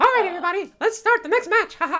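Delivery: very high, very loud, squeaky cartoon voice. Playing online with others, the speaker talks for a viewer, Mickey Mouse voice. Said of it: "I'm gonna talk like Mickey Mouse".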